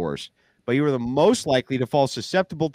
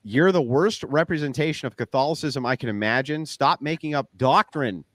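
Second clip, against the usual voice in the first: plain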